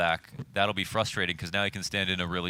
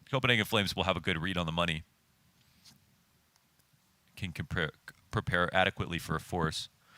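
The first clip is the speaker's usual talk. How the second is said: speaking through hiccups. Giving game strategy advice while having the hiccups, hiccuping. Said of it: "Sorry, hiccuping".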